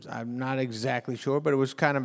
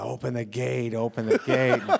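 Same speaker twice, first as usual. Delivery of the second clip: usual speaking voice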